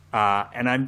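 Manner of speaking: plain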